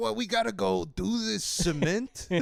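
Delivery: tough-guy New York accent. Imagining how construction workers talk, doing a New York accent. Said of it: "every construction worker in my mind has like a New".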